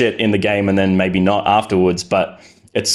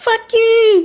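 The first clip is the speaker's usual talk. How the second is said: mock tiny child voice, higher pitched. Retelling Xbox Live voice messages: imitating a tiny child voice. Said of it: "This tiny little child voice going like".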